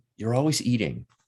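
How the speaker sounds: normal talking voice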